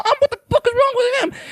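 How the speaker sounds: put-on very high, rushed, panicky kid's blurt. Acting out a kid who sees him: imitating a kid freaking out. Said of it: "he's freaking out".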